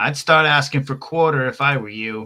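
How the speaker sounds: very loud, high, menacing shout. In a tabletop game, a player's character yells down at the healer, yelling. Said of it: "I yell at this guy".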